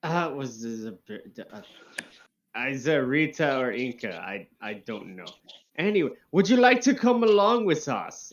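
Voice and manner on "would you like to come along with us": put-on loud, very high, creepy German accent. Inviting the others in character to come along: slipping into a German accent. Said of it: "And now I'm slipping into German".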